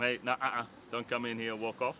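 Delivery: ordinary delivery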